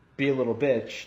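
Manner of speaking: usual speaking voice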